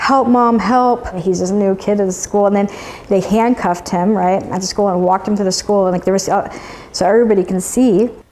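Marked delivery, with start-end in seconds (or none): 0.0-1.1 high, small, mild cry. Recounting a mother's story of her son handcuffed at school: retelling screams for help. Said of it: "screaming, like".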